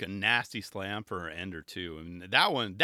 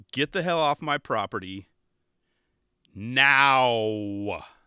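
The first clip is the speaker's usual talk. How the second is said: stern, loud, very slow, drawn-out delivery; 3 semitones higher, 7 dB louder than usual. Retelling a security guard's order: imitating a stern loud order. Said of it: "saying it very, uh, very s-, stern and out loud".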